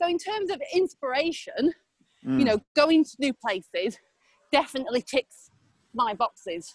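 short of breath, puffing, winded delivery. Tell someone where your inspiration comes from while you are so out of breath. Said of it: "I'm so out of breath".

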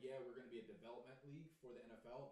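ordinary talk, nothing marked

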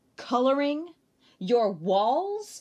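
loud, exclaiming delivery. Narrator reading the mother's line to her daughter Liza, exclaiming. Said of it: "Her mother exclaimed".

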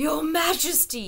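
high, wheezing, breathless, gasping voice. A frightened old shepherd falling to his knees before the king, wheezing. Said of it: "he wheezed".

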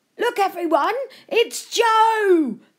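very high, loud, drawn-out holler. A stranger calls passers-by over on spotting a boy: hollering. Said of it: "the man hollered".

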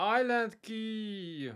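high, slow, drawn-out excited shout of delight.

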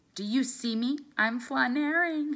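thrilled, eager. Diva, looking out at the world from far away, says excitedly. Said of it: "Diva said excitedly".

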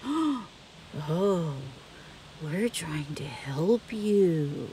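very slow, low, eerie, creepy voice, words drawn out. Telling dr. tobb about the woman who was kidnapping her, imitating the woman. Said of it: "I'm going to act how she was".

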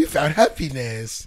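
put-on Jamaican or African accent. Repeating how another speaker said a line: imitating a Jamaican or African accent. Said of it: "He sound like a Jamaican when he said, or African".

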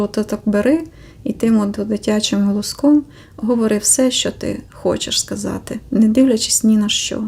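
ordinary talk

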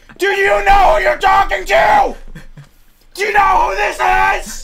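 piercing scream, very high and very loud. Speaker screams at a listener who says it is hurting their ear, screaming. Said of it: "you're hurting my ear".

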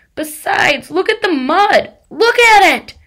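very high, loud, shrill, desperate shrieking scream. Refusing a friend's suggestion, he is screaming. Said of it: "He was screaming now".

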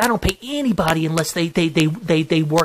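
normal talking voice

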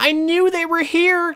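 put-on very high, loud seven-year-old's voice. Retelling an enemy coming up the stairs, quoting him in a little kid voice. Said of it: "says in a voice that I can never emulate".

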